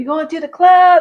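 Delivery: high, loud yelling call.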